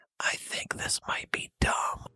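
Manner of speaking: hushed, very quiet stage whisper. Retelling what his wife leaned over and said mid-movie: imitating a whisper. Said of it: "The whispering".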